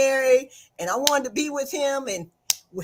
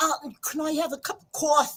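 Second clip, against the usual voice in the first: put-on New Jersey accent; 2 semitones higher, 3 dB quieter than usual. Retelling how cousins from Jersey asked for coffee: imitating a Jersey accent. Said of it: "I have cousins from Jersey".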